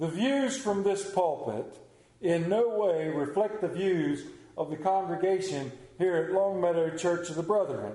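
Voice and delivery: best radio announcer voice, on-air broadcast read. A preacher gives a statement before his sermon, radio announcer voice. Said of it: "in my best radio announcer voice".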